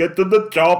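loud, high-pitched impression voice, laughing.

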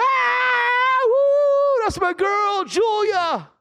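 mock, very high, very slow, joyful cheering scream. A father reenacts cheering as his daughter came down at graduation: retelling an excited yell. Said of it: "I yelled and screamed".

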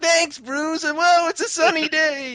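giddy, happy voice, very high and loud. Retelling the ending of a Batman story, acting out happy Jean-Paul Valley. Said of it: "he's all happy and everything".

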